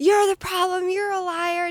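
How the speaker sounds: high-pitched yelling. Retelling her switching back to yelling: imitating someone yelling. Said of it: "back to yelling at me".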